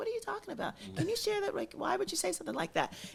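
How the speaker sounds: very high, sing-song, mock sweetest, nicest voice. A woman retells questioning a man, using her put-on sweetest, nicest voice. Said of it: "in my sweetest, nicest voice".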